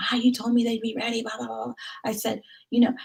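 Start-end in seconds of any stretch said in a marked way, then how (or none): 0.0-1.7 put-on mild complaining, griping tone, half-yelled. Retelling how he complained to the receptionist: imitating someone yelling. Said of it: "yelling at the receptionist".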